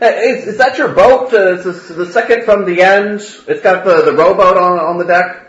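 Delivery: loud, high-pitched calling-out shout. A young man bursts in, spots someone, and shouts without walking up: shouting. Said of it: "he kind of shouts".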